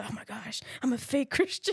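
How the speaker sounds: put-on panicked voice. Retelling an inner thought after lying about being saved: retelling own panic. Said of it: "I'm panicking inside".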